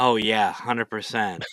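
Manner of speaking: sarcastic, mock-enthusiastic tone. Closing out the episode, the host replies to his own remark: sarcastic. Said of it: "Insert sarcasm".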